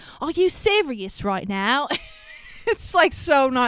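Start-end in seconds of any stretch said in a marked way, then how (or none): 0.2-1.9 exaggerated snooty posh British, swooping pitch. Retelling a scene, the speaker voices the Simon Cowell parody guy in an over-the-top snooty British voice. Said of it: "in his over-the-top British snooty voice".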